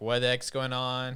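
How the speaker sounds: ordinary delivery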